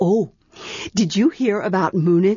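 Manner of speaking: ordinary delivery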